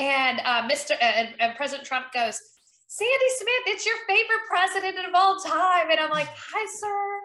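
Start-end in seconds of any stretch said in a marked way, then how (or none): 6.3-7.2 acted voiceless speech, much higher pitch. Retelling answering the president's call with no voice, mimicking a lost voice. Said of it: "My voice is gone".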